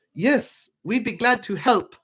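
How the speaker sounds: very high put-on Swedish accent, clerk voice. Imagining the front desk answering a gold member checking in, in a swedish accent. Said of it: "that's my Swedish accent".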